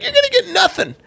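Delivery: very high, mean bully voice. Imitating Gary Vee bullying sellers at yard sales: mean Gary Vee impression. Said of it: "And he's like".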